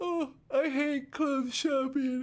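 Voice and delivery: spoken through a yawn. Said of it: "Sorry, I'm yawning".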